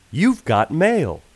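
put-on announcer voice. Asked to do an impression on air: AOL You've Got Mail voice. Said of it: "I think I do a good impression of the AOL You Got Mail guy".

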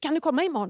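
high, loud, eager voice.

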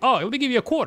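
very high, pitched-way-up voice. Showing what a lowball offer sounds like: imitating an uncle. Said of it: "that's an impression of, like, one of my uncles".

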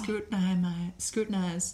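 put-on seductive Southern belle accent. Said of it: "Why does she sound like a Southern belle?".

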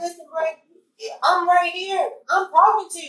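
exasperated voice.

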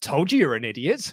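smug put-on tone. Retelling a wrestler taunting her rival after the loss: imitating someone smug. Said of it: "with the smug on her face".

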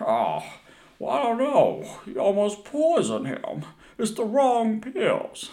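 very high, slow, swooping, drawn-out movie-actor accent. Joking about how the kid's lines would sound: James Stewart accent. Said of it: "do a James Stewart accent".

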